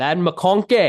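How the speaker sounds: big, goofy, high, loud, booming cartoon ogre voice. Talking football, saying a player's name like Shrek. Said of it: "like if Shrek was saying it".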